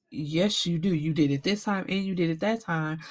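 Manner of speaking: plain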